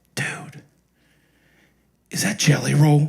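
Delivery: stage whisper, leaning in. Retelling what an audience member said to his friend: imitating a whisper. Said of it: "then I hear him whisper".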